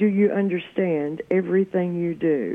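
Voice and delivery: quiet threatening undertone. Recounting how a woman grabbed the speaker's arm, retelling her low-voiced words. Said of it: "she says in a low voice".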